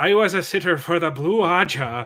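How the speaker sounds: put-on Irish accent. Showing how the co-host's sentence goes, said in an Irish accent. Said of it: "try try it with the Irish accent".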